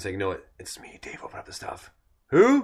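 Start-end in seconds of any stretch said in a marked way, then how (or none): 0.2-1.9 breathy, hushed whisper. Retelling the Dave skit, the speaker plays someone knocking at a door, whispering like Cheech. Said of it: "he's like kind of whispering".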